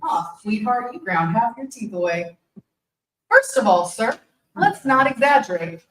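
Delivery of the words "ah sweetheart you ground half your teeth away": ordinary talk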